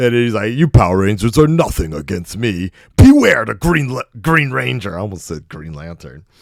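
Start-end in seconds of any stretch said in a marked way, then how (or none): 0.5-5.0 loud, goofy evil villain voice, taunting. Retelling a villain's taunt to the power rangers from childhood, imitating an evil villain. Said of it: "he came out there with his evil laugh and he was like".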